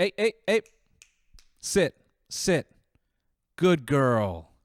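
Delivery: booming, very loud, high-pitched, slow delivery. Mocking how a man talks to a customer in her home, mock talking to a dog. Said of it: "talks about this person in their home like they're a dog".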